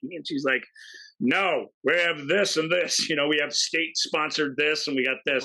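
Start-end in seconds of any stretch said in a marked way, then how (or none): 1.2-5.4 mock grumpy old woman voice, German accent. Retelling a movie scene where a newsstand clerk answers: imitating a grumpy old german lady. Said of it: "he asks this old grumpy German lady".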